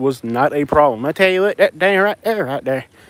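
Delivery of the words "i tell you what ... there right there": full put-on hillbilly accent. Speaker explaining he had to stop doing the hillbilly voice: hillbilly voice. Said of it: "nobody in Florida speaks that way".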